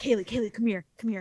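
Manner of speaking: imitated secretive whisper. Retelling how a coworker called them over: imitating a secretive whisper. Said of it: "he was all secretive about it".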